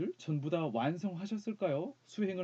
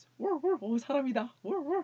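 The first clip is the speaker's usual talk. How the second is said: dog-like put-on voice, much higher; 10 semitones higher, 4 dB louder than usual. Picking a voice for themselves and trying it out: doggy voice. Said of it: "It'd be more like a Dougie voice".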